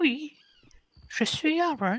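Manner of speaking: shrill, booming, very high, loud, drawn-out disguised voice. Trying out a different voice when asked to: changed voice. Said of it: "Essaye de changer de voix".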